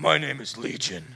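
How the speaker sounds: put-on demonic voice without a growl. Reading the Bible passage, voicing the demon who answers Jesus, Legion demon voice. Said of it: "that was my attempt, okay? At this demonic voice".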